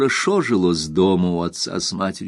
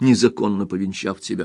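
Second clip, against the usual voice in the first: ordinary delivery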